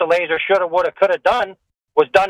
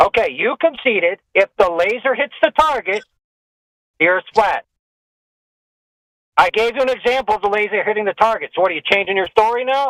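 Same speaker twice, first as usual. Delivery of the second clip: irritated, angry, combative, accusing tone. Pressing the other speaker to admit a point in a debate: angry. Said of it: "you're angry enough".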